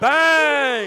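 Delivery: excited, loud, high-pitched shout.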